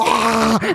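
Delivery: retching noises. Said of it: "eyes watering".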